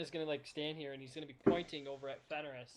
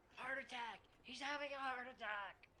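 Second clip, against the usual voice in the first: frantic, high-pitched panicked scream; 8 semitones higher, 6 dB quieter than usual. Voicing a prisoner who fakes an alarm for the guard: screaming in panic. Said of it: "Carrion is going to scream out".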